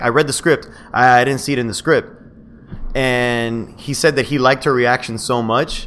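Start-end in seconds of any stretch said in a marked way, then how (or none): none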